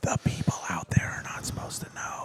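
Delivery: hushed whisper. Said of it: "why are we whispering?".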